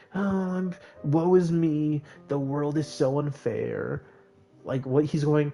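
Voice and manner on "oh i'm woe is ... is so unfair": mock self-pitying whine, very slow, drawn-out. Mocking the game's hero as a complainer: mock whining. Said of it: "one of the guys who's like".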